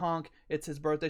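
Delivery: normal talking voice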